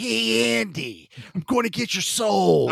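very slow, creaky, rough, high drawl, every word dragged. Showing how to voice a creepy line with a little Jack Nicholson: Jack Nicholson voice. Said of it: "you gotta throw a little Jack Nicholson in".

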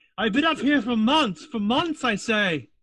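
very high, echoing, ringing helmet voice. Voicing a knight speaking from inside her closed helmet: voice ringing inside a helmet. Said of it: "You can hear kind of ringing inside of her helmet".

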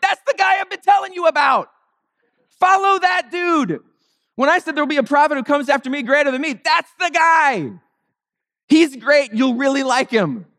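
high-pitched, excited shouting. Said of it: "Moses would have been like".

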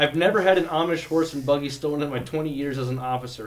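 plain

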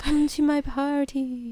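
loud, spooky ghost voice. Imagining a ghost inviting them to its party, in a ghostly voice. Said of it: "Maybe it's just like a voice".

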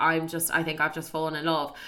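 plain

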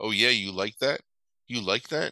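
put-on creepy priest voice. Retelling a movie scene, quoting the priest to a girl: creepy priest voice. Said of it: "the creepiest shit".

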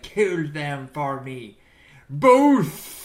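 very loud, very slow hammy bellow, each word dragged. Retelling pretending to be Chris Sarandon in the transformation scene: Chris Sarandon impression. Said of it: "I was pretending to be Chris Sarandon".

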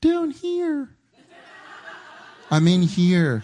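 put-on teeny, high, swooping little mouse voice. Acting out god answering from below: little mouse voice. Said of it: "he wouldn't have a little mouse voice".

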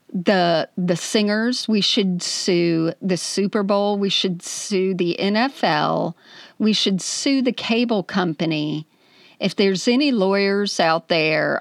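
plain

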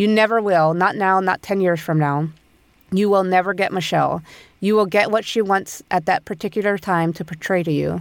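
normal talking voice

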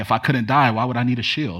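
put-on sarcastic tone. Retelling a movie scene, a character answering a huge opponent, mock-sarcastic. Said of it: "Really sarcastic".

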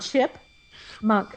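"chipmunk" pulled apart, slow, breathy, half-whispered. Trying to pronounce a tricky word correctly: saying chipmunk slowly. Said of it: "if I slow it down".

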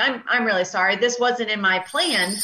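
plain

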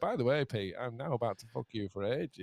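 put-on, imitated sneaky voice. Recalling a funny podcast moment, imitating Mike Mobley's sneaky delivery. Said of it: "the complete sort of barefaced sneak of".

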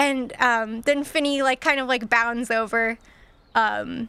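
ordinary talk, nothing marked

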